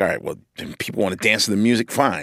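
grudging, bitter, sarcastic scoff. Retelling a guy's reaction to people just wanting to dance: mock-bitter, scoffing. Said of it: "kind of in a very bitter, scoffy way".

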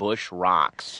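ordinary talk

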